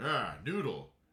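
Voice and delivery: put-on rumpled detective character voice. Reading a game character's line to a co-player: Columbo voice. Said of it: "Doing that in the Columbo voice".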